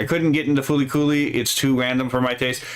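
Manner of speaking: ordinary talk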